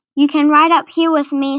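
ordinary talk

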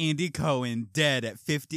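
booming, very loud, slow headline announcer proclamation. Imitating how people in a prank trend say the news: headline delivery. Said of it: "they say it like a headline".

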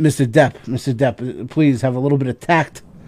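normal talking voice

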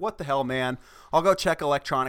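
plain

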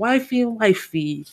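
high put-on Italian accent, man voice. Acting out recommending the podcast to a friend: Italian man voice. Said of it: "I turned into an Italian man".

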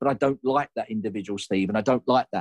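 usual speaking voice

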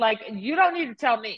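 ordinary talk

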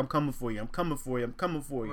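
ordinary talk

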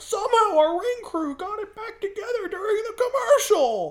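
high, loud mock announcer voice.

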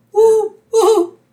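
high, loud hooting like an owl.

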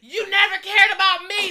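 very loud, high-pitched shouting. Retelling an argument while walking away in front of everybody, imitating him yelling. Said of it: "Like yelling in front of everybody".

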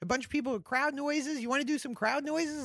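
fast, high-pitched, hurried rapid-fire talk. Quoting a man who asked him to join a loop group: retelling his fast talk. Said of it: "He's talking really fast".

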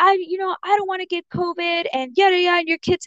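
mock-angry ranting. Retelling what a man said after being told to calm down: angry rant. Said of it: "that pissed him off".

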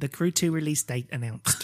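stage-presenter announcement voice. Reading a headline when asked to sound like the PlayStation guy. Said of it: "can you say it like that guy from PlayStation?".

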